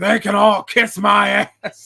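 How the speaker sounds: loud, rough, slow promo announcer delivery. Retelling a favourite wrestling promo where he throws the belt down: imitating Shane Douglas. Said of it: "He's like".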